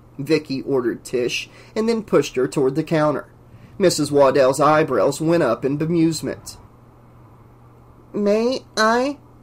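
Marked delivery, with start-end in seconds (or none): 8.1-9.2 tiny, pitiful, pathetically small little voice. Tish asks Colleen a question in a pathetically small voice. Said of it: "asked Colleen in a pathetically small voice".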